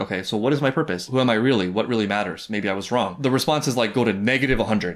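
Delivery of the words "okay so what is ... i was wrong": ordinary talk, nothing marked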